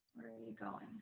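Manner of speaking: deadpan, flat, doing nothing with it. Repeating the line as instructed, flat and totally factual. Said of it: "Do nothing with it".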